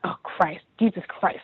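soft, breathy, disgusted muttering mumble. Retelling someone walking past the desk: imitating someone mumbling in disgust. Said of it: "he starts mumbling to himself".

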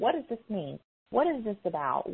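insistent voice. Speaker sharing with a group, demanding tone. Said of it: "it's creeping into my voice right now".

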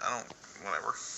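quiet, unenthusiastic, dismissive tone. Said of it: "Don't sound too excited".

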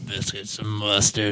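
very hushed, low, very quiet creepy murmur. Trying a quoted line again after a pause, in a put-on creepy voice. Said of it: "you make it too creepy too fast".

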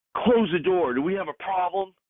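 high, play-acted, screamed man's voice. Speaker retells a man at a door turning around, imitating him screaming. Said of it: "he screams".

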